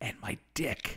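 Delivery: very soft, breathy whisper under the breath. Retelling a movie scene, quoting a character's line, retelling a whisper. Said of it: "And then he whispers".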